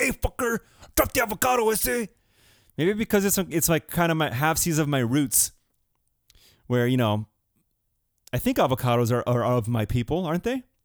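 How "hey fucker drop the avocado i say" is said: put-on Spanish-inflected street accent, pitched very high.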